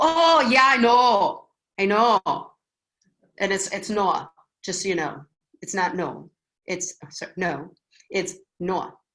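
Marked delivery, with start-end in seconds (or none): 0.0-2.2 very loud, slow, drawn-out Wisconsin vowels. Showing how a phone call with a Wisconsinite sounds: Wisconsin accent.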